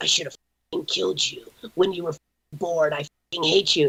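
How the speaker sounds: mock demonic psychotic voice. Recalling breakfast as a five-year-old, the speaker imitates their mother's demonic, psychotic voice. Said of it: "this this demonic, uh, psychotic voice".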